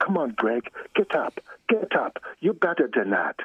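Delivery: Barbados island accent. Quoting a man from Barbados urging him to get up, in Barbados island accent. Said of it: "he would use that accent on me".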